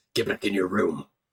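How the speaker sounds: very deep, gravelly bass voice. As the door opens, a character speaks human in his deepest, gravelliest voice. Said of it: "in his deepest, graveliest voice".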